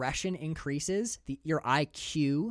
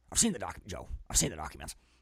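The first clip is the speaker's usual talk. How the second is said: put-on ranting talk-show voice, pitched lower; 9 semitones lower than usual. Joking about a conspiracy claim, doing an Alex Jones impression. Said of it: "that's a pretty damn good impression".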